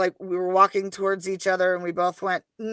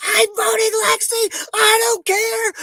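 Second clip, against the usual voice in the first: very high, drawn-out scream; 5 dB louder than usual. Retelling screaming at people in a crazy nighttime scramble: imitating own past screaming. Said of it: "I am literally screaming at people".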